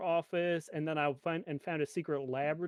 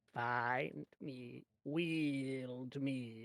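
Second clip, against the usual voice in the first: mysterious voice, very slowly drawn out; 3 semitones lower, 6 dB quieter than usual. Retelling a voice heard in his head: imitating a voice in his head. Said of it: "in my head, somebody was like".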